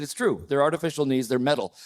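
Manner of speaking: ordinary delivery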